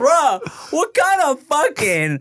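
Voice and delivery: high-pitched, loud, exasperated, disbelieving rant. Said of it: "And I was like".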